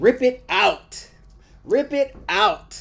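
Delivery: passionate, very high, slow, hard-stressed emphasis. Showing a class how the line sounds: loud, passionate, strong emphasis. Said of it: "Say it with strong emphasis".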